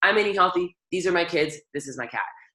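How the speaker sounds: normal talking voice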